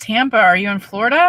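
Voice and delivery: ordinary talk, nothing marked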